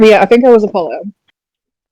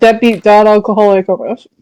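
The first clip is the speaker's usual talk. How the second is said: usual speaking voice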